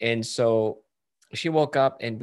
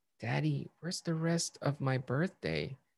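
put-on soft, hushed little girl's stage whisper; 3 semitones higher, 8 dB quieter than usual. Retelling a daughter's words after she blew out candles: imitating a child half-whispering. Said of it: "she kind of whispers to me".

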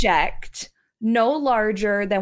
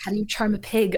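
quiet muttering under the breath; 4 dB quieter than usual. Told to charm a pig, a character mutters under her breath. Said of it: "under her breath".

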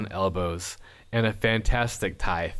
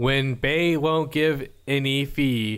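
robotic, computer-read text-to-speech narration voice; 4 semitones higher than usual. Speaker imitating how a clip starts, doing a TikTok voice impression. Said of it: "That's my impersonation of TikTok".

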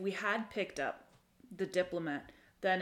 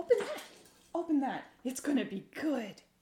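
eager pixie voice, high, swooping, excited urging; 7 semitones higher, 3 dB louder than usual. Player voicing her as she points excitedly at the drawer: excited. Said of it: "She'll fly up to [name]'s face and she'll be like, / [name] goes up to the door and she says".

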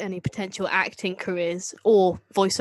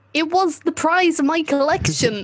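put-on loud American accent, pitched up; 9 semitones higher, 5 dB louder than usual. Reading a Doctor Who scene aloud as Henry Van Statten: put-on American accent. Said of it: "get your American accent ready".

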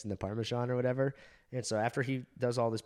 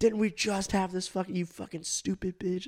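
mock high-pitched screaming rant; 9 semitones higher, 3 dB louder than usual. Retelling being screamed at after the prank: imitating someone screaming. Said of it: "screaming at me".

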